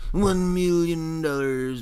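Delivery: grand, sinister supervillain voice. Host trying out impressions for listeners, Doctor Evil voice. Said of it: "I had to think for a minute how Doctor Evil sounds".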